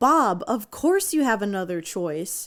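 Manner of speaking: ordinary talk, nothing marked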